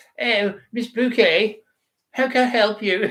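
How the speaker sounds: very high put-on English accent, phone voice. Retelling how mum answers the phone, imitating mum's English phone voice. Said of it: "She sends it to an English Miss Bouquet".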